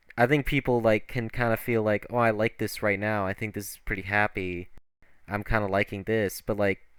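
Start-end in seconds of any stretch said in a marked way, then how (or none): none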